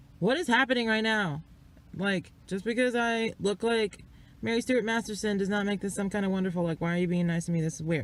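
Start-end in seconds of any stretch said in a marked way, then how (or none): none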